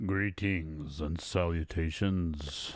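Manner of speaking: put-on deep, bassy host voice. Host opening the live stream, greeting viewers in the deepest bassy voice. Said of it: "with the deepest bassy voice ever".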